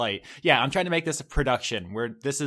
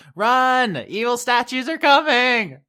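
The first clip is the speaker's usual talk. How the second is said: very loud, very high-pitched shout; 12 semitones higher, 10 dB louder than usual. In a tabletop game, your character magically amplifies her voice to the crowd: yelling. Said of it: "Anne uses thaumaturgy and she yells".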